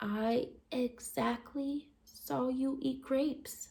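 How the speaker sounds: very soft, whispery voice. Narrator answering her question in the story, very whispering voice. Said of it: "I made my voice very whispering".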